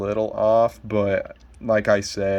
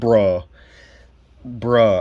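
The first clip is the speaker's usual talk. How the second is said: raised, loud, pissed-off angry "bruh"; 5 dB louder than usual. Reacting after a plastic part of a figure just snapped: angry. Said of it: "I am so fucking pissed right now".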